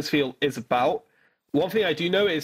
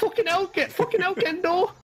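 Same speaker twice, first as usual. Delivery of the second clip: put-on high-pitched Scouse accent. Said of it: "speaking of Scouse accents".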